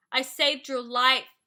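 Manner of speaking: furious, very loud angry yell at full volume. Narrator reads his reply after she mocks his pink roses, yelling angrily. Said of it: "he yelled angrily".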